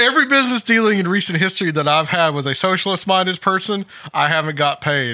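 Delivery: ordinary talk, nothing marked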